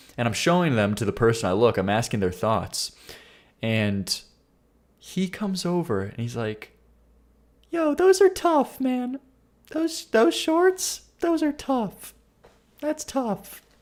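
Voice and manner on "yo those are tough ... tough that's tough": very high, gushing, hyped-up voice. Retelling how a cashier complimented his shorts: imitating the cashier's voice. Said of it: "he said it just like that, by the way, real voice".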